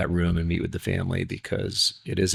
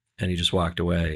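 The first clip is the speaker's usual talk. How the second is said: ordinary talk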